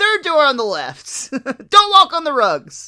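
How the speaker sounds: mock loud, yelled call. Acting out how a woman whispers then calls out directions, retelling a yell. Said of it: "then yells out".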